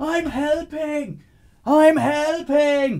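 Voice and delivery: put-on screaming. Describing an imagined fire scene, yelling to people on the street, acting out screaming. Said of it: "I'm screaming to the people gathering on the street".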